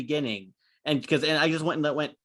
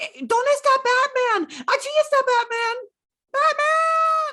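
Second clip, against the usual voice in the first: put-on very high, loud, drawn-out little-kid toddler voice; 5 dB louder than usual. Retelling a three-year-old kid in the cinema: imitating a three-year-old kid. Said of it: "hearing a three-year-old kid going".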